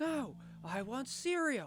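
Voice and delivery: mock very high, very slow, drawn-out, full-throated yell. Retelling what a younger brother yelled downstairs: imitating a yell at the top of lungs. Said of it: "he yelled, like, at the top of his lungs".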